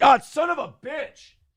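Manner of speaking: fake cry of pain. Imagining being hit by a foul ball on air: mock pained cursing. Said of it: "If I got hit, I'd have a hard time going".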